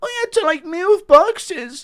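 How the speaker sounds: squeaky, very high voice, very slow and dragged out. Play Ian Gary having to work a normal job, as an impression of Ian Gary. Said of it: "Impression of Ian Gary".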